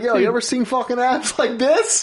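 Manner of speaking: very high-pitched, put-on boastful bro voice. Acting out a made-up character showing off abs: imitating a Jersey Shore fuckboy. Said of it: "He just goes straight Jersey Shore status fuckboy on him".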